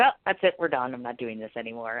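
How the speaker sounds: normal talking voice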